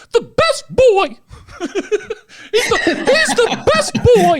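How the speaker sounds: very high, swooping squeaky voice, high and slow. Changing their voice to actually sound like Mickey Mouse. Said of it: "changed it to actually sound like Mickey Mouse".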